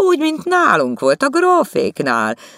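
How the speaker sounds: very high, sneering, swooping mocking sing-song. Narrator reads Stefi adding a remark to Etel, mocking and smiling. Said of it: "tette hozzá Stefi gúnyosan mosolyogva".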